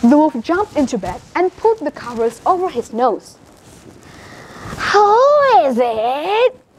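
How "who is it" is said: cackling voice, higher. Reading the wolf in the grandmother's bed answering the door: cackly voice. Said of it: "he called in a cackly voice".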